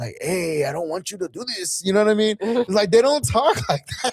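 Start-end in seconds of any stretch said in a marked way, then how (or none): 0.2-1.8 put-on soft East LA Mexican-American English accent. Imitating how a mexican cartel leader character talks: east la mexican accent. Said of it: "he's talking like an East L A Mexican".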